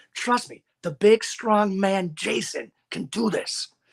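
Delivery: intimate, steadying, slow, close, reassuring tone. Retelling what he whispered to his wrestler after a throw, retelling a whisper into an ear. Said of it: "And I'm whispering into his ear".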